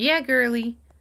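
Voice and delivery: innocent-seeming cutesy voice. Retelling a conversation with a mentor, imitating her cutesy voice. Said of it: "I'm gonna try to impersonate her voice".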